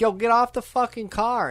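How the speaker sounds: angry male voice, very high, shrill yelling. Retelling a movie scene where a man yells at people on his car: imitating a man yelling. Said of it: "this dude starts yelling".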